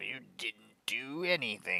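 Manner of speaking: mock half-yell, mildly scolding tone. Describing a day of making videos, retelling yelling at oneself. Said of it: "I'm like yelling at myself".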